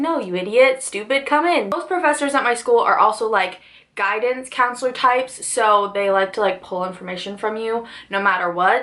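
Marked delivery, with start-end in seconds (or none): 0.0-1.7 joking, sarcastic, teasing tone. Retelling the professor's reply when asked about class: imitating a sarcastic professor. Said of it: "he's super sarcastic and funny".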